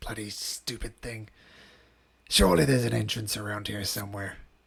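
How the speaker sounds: muttering under breath. Voicing frustrated adventurers searching for an entrance: mumbling under breath. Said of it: "you hear them mumbling under their breath".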